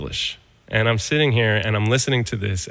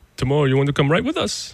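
horrible, bad put-on German accent, pitched up; 5 semitones higher than usual. Retelling a phone call, the speaker quotes the callers in a horrible German accent. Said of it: "that was a horrible German accent".

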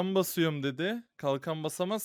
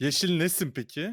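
ordinary delivery

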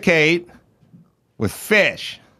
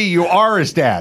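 plain

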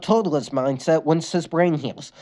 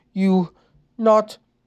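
slow and slurred, higher pitch; 2 semitones higher than usual. Narrator voicing a character who speaks after staring blankly, slow slurred speech. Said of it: "Lincoln said slowly in a slurred tone".

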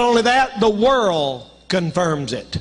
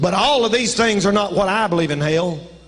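usual speaking voice

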